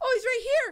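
high, delighted cooing.

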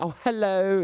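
overeager, gushing voice, pitched high.

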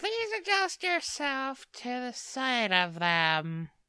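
affected put-on narrator-style character voice. Reading a character's lines aloud while another player comments, in a put-on character voice. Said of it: "your voice is just evolving for this character".

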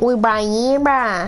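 put-on Australian accent. Told he sounds British, the speaker switches to a put-on Australian accent. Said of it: "Now I sound Aussie".

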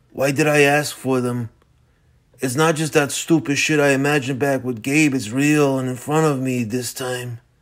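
ordinary delivery

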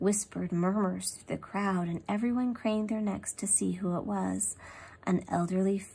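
ordinary delivery

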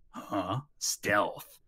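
terrible parroting with rising, questioning tone. Repeating back what someone told him, terrible Snake impression. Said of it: "terrible Snake impression".

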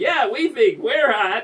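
shouting. Retelling what one of a passing group shouted out, retelling a shout. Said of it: "one of them shouted out".

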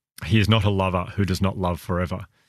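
ordinary talk

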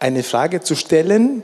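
Frage stressed, said slowly.

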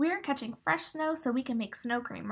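ordinary delivery

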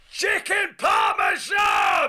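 very high-pitched yelp. Retelling a lunch where a plate arrived and Noddy shouted: imitating Noddy shouting. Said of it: "with that amazing voice".

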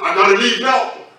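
coarse, rough-edged voice. Retelling how a young lady suddenly spoke: imitating a rough voice. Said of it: "But the voice said".

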